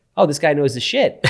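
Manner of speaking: normal talking voice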